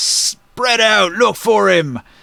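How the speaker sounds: slow, drawn-out screaming in a giant voice. Voicing a giant in charge ordering the others to search: screaming orders. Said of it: "he screams".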